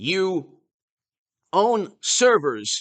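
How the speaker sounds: very slow, drawn-out emphatic delivery. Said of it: "I'm gonna say this slowly".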